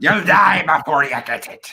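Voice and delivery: put-on sudden slip into a pirate accent. Quoting a line from Evil Dead: Ash with a pirate accent. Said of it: "that's supposed to be Ash, but suddenly he's got, like, that, that accent".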